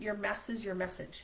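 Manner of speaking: usual speaking voice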